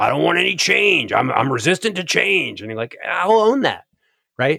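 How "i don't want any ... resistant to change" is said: put-on, played-up, creaky old man voice. Podcast guest acting out what he would say, in a put-on old man voice. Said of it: "You'll even own the voice that you said it in".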